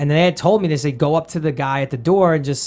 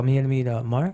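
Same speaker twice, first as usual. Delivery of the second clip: nervous, scared, halting mumble; 4 dB quieter than usual. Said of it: "I literally mumbled it. I was so scared".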